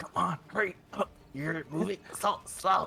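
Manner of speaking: seething, urgent, furious goblin half-whisper. Narrating the game to the players, the speaker voices the goblin, furiously half-whispering. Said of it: "the goblin is like furiously just like um whispering".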